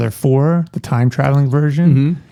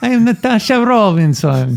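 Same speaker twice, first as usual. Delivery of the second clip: put-on higher voice, Polish accent; 8 semitones higher than usual. Playing the woman a single guy meets, Natasha Robinson, Polish accent. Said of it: "I haven't heard you do a Polish accent".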